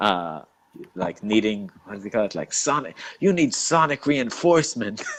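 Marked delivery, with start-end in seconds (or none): 2.5-5.0 mock, high-pitched, flipping-out, losing-it rant. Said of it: "flipping out on them".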